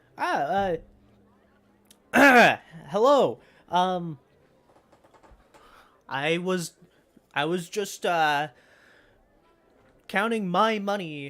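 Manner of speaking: caught off guard. Voicing a character caught hiding his things by a player: startled. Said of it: "he is visually, uh, startled".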